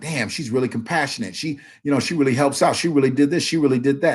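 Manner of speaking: normal talking voice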